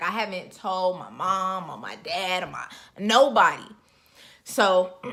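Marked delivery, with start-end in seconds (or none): none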